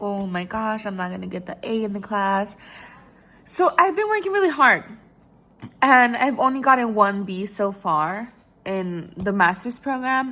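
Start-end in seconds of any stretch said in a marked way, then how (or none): 0.0-2.5 put-on stressed, worried voice, quieter. Retelling a past worry about a group project grade: imitating own stressed self. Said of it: "I remember being so stressed about it".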